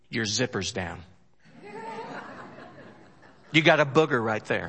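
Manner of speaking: put-on, playful, joking, sing-song teasing. Showing what a real friend tells another friend, said jokingly. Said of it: "I say that jokingly".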